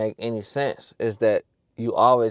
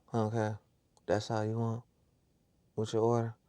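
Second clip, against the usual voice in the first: mock unhappy, flat, bored delivery; 10 dB quieter than usual. Retelling what a drive-thru worker said while taking an order: imitating a nonchalant, unhappy worker. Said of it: "That's how she sounded".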